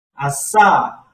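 strong stress on final syllable sa in assa. Language lesson on shouting assa: stress on last syllable sa. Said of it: "Last syllable, you have to pronounce strongly".

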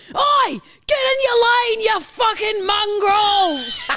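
high, drawn-out screaming yell. Retelling someone screaming at other drivers out of the car window, retelling a scream. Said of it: "screams out".

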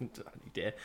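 soft, whispered, under-the-breath aside. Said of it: "Hopefully you didn't speak loud enough".

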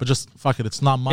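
ordinary talk

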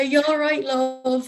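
put-on strong Dublin accent. Retelling what a man said to them at 3:30 in the morning, the speaker uses a big Dublin accent. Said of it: "He had a big Dublin accent".

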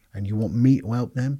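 acted furious scream. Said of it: "I was going screaming".

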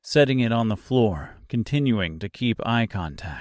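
ordinary delivery

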